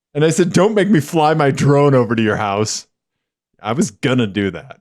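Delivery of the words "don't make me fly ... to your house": normal talking voice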